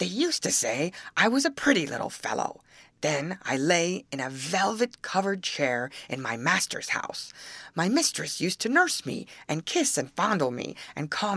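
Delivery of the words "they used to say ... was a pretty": usual speaking voice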